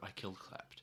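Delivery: hushed whisper. Playing a character, the speaker confesses while others are close by, in a dropped voice. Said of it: "I'm gonna drop my voice and go".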